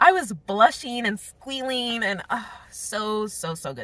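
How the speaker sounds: emphatic, enthusiastic, high and drawn-out. Gushing about a scene in a book she read: loud, near yelling. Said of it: "Sorry if I'm".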